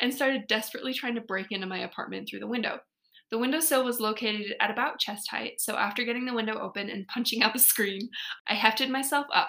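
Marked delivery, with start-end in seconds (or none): none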